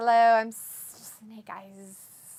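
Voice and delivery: booming put-on voice, every word drawn out. Reading a chat message aloud in a funny way: Slytherin-like voice. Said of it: "It's like Slytherin".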